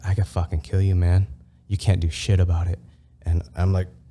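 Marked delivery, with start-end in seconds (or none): 0.0-2.8 put-on ghostly whisper, quieter. Retelling a dream where a ghostly figure chokes them, retelling a ghost's whisper. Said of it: "It starts whispering like".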